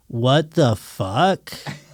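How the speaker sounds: put-on childlike kid voice. Retelling a batter's reaction to his first 102-mile fastball, imitating a kid's voice. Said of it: "I bet he said it like a kid too".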